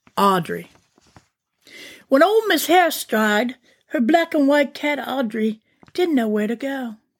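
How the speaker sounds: English accent. A narrator begins reading a story aloud to listeners, in a british accent. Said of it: "in a British accent".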